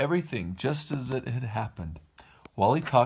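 ordinary delivery

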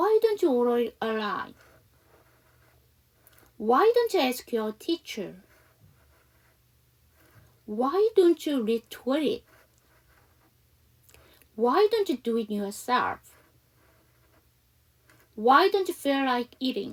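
very slow, carefully spaced, deliberate reading.

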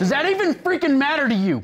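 raw, shrill shout, pitched way up. Mr. Griffin, accused of taking money, to his questioner: shouting.

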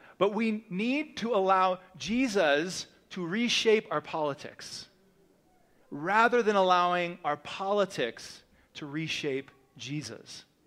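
very slow, deliberate, drawn out word by word. Speaking to listeners after announcing the point will be said really slow, very slow. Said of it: "I'm going to say this really slow".

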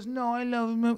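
put-on drunk woman voice. Retelling what a drunk woman said about a dog: imitating a drunk woman. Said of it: "She's so drunk".

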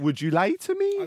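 put-on high-pitched Welsh accent. Showing another person the simple sentence they were asked to say, Welsh accent. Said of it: "Say in a Welsh accent".

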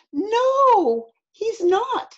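high scream with drawn-out "no". Narrator voicing Eddie answering his mom, screamed. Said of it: "screamed Eddie".

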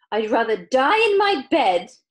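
very loud, drawn-out, hollering shout. Narrator reading a grandmother's reply when the family refuses the lift, shouting. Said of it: "shouted Grandma Josephine".

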